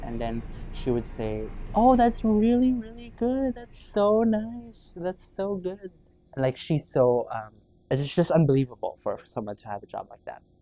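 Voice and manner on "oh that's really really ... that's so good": very high, slow, drawn-out kindergarten-teacher voice. Retelling how a lady responded to the speaker's job, imitating a kindergarten-teacher tone. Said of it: "like a higher tone, much slower, and like very kind of like a kindergarten teacher".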